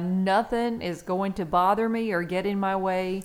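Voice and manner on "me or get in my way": ordinary talk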